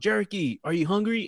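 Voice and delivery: loud, carrying, hollering calling yell. Recalling college visits to a friend's house, speaker quotes the friend's mom, imitating a mom yelling. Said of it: "his mom will yell like".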